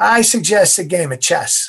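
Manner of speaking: put-on nasally, nasal New England accent. Retelling what a lung doctor said to the mother: nasal new england accent. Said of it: "he talked in a nasally kind of New England accent".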